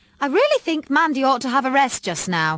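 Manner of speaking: very bossy, loud, commanding tone. A mother speaks to her daughter's visitor in the hall, in her bossiest voice. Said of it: "she said in her bossiest voice".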